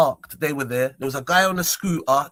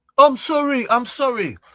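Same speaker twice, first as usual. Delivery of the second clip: mock slow, drawn-out, shrill full-lung yell, very high; 9 semitones higher, 4 dB louder than usual. Retelling a man apologizing to him, the speaker is imitating a loud shout. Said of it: "shouted it out at the top of his lungs".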